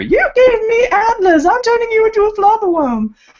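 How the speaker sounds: very high, loud shrieking scream. Retelling a fan fiction scene where Hermione yells at Parvati: imitating Hermione screaming. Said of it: "Hermione just screams at her".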